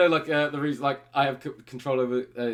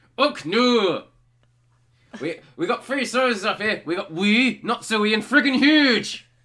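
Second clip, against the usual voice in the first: loud Northern Scottish accent through clenched teeth; 7 semitones higher, 6 dB louder than usual. Demonstrating a second accent, in a Northern Scottish accent with clenched teeth. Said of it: "The only difference is I'm clenching my teeth now".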